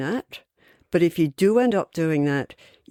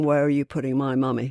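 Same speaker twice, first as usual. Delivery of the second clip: imitated crying, pleading child voice; 3 semitones lower than usual. Retelling a little boy running towards his mum's coffin: imitating a crying child. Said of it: "crying, going".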